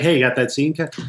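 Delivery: ordinary delivery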